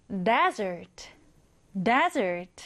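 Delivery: desert, stressed on the first syllable.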